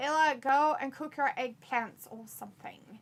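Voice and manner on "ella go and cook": usual speaking voice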